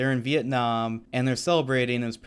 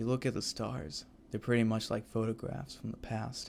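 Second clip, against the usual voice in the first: very soft, quiet, hushed delivery; 3 semitones lower, 11 dB quieter than usual. Praising a film character, imitating his voice: soft Doctor Manhattan voice. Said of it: "he had a very soft voice like this one".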